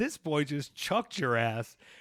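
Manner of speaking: high-pitched taunting voice, cracking up with laughter. Retelling what Joey said while cracking up: imitating Joey cracking up. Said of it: "Joey was cracking up, going".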